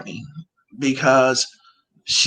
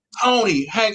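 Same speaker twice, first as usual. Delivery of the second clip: mock scream, higher; 8 semitones higher than usual. Retelling screaming at someone through the phone: imitating own screaming. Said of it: "I'm screaming through the phone".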